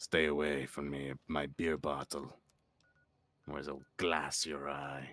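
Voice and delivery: put-on Spanish general's voice. Streamer speaking in character on stream, in a Spanish general voice. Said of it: "sounds like I'm some variety of Spanish general".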